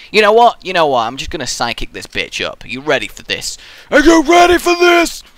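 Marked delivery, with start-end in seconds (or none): 2.6-5.2 put-on alien monster voice, much higher, louder. Speaker trying out a new psychic sound, in an alien monster voice. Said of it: "It only sounds like an alien monster".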